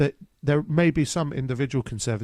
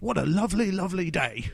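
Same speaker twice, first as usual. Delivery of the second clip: put-on high child character voice, lifted up; 7 semitones higher than usual. Describing a film trailer to the other speaker, doing a Nicholas Hoult impression. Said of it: "Did you like my impression?".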